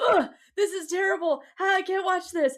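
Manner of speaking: mock, high, super-dramatic hammed-up disgust. Retelling people in a book watching a birth: imitating a super dramatic reaction. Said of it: "Like, super dramatic".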